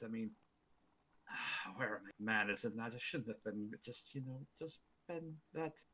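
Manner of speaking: very quiet mumbling that trails off. A character in the scene trails off mid-sentence: trailing off, mumbling. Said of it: "He starts trailing off and mumbling".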